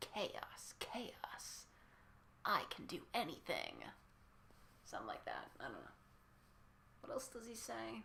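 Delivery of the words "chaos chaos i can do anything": very slow, breathy whisper with a savored rhythm. Practicing a character's line to get the cadence right, doing a Jevil impression. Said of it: "I want to try to get that cadence right".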